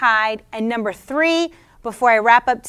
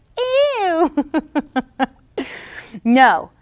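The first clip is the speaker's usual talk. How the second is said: much higher, squealy, squeaky put-on voice; 4 semitones higher than usual. Talking about Jesus and the Samaritan woman, acting out a reaction: high-pitched squealy voice. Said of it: "in that high-pitched, squealy voice".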